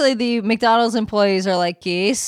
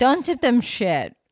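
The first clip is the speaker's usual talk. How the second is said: contemptuous, derisive, scornful dismissive tone; 2 semitones higher than usual. Told someone plans to tip McDonald's workers $2, the speaker answers derisively. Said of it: "this like derision in your voice".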